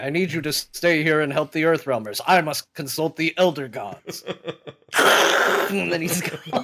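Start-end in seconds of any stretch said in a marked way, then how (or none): 0.0-4.2 deadly serious, weighty, grave, carefully enunciated delivery. Describing a character who is serious the whole time, imitating a very serious man. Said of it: "He's just so serious the whole time".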